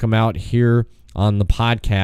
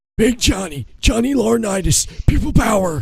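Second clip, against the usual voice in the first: put-on wrestling announcer voice, pitched higher; 11 semitones higher than usual. Doing impressions for another speaker who asked to hear John Laurinaitis: John Laurinaitis impression. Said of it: "you wanna hear John Laurinaitis? Here we go".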